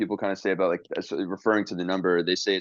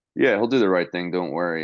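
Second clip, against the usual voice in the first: ordinary talk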